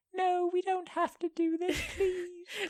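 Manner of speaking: very high, small elephant character voice. Laughing at the other person's reaction, mimicking them in a little elephant voice. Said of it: "this little elephant voice going".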